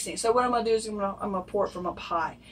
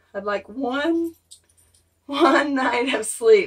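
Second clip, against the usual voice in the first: slow voice, cracking and breaking apart; 4 semitones higher, 6 dB louder than usual. Sick speaker, coughing at night, talks to viewers with voice breaking. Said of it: "I can hear my voice breaking".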